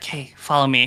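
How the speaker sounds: whispered speech. Playing a character, telling Iris to follow: whispering. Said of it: "I'm gonna whisper to Iris".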